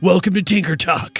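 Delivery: put-on little frog person voice. Voicing a frog character opening his show: Thaddeus Clodsworth voice. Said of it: "and he goes".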